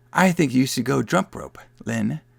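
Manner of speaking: put-on eerie creaky little-kid voice. Retelling a movie scene where kids talk like little kids: creepy little kid voice. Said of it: "Very creepily".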